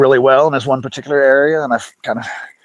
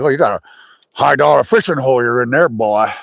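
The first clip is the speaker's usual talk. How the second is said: imitated old man voice. Retelling what an old man said while fishing: imitating an old man. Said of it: "that old man was like".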